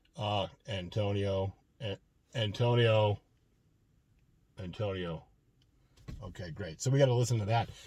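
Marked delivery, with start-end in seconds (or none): 0.7-5.3 droning, level, flat monotone. Imitating a guy with the most monotone delivery ever: flat monotone. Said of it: "got the most monotone delivery ever".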